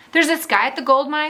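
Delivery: ordinary delivery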